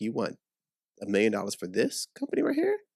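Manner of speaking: mock laughing, swooping, disbelieving scoff. Retelling how the bank reacted to a loan request: imitating the bank laughing. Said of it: "the bank's over here laughing like".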